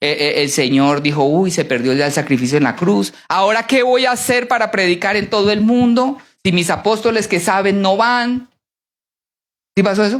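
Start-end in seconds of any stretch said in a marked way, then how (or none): none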